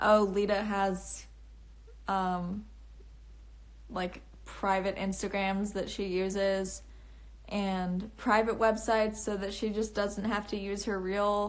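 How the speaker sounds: usual speaking voice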